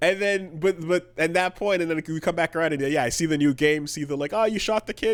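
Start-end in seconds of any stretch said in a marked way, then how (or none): 4.3-5.2 put-on nervous cartoon teen voice, higher pitch. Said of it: "it's Morty voice".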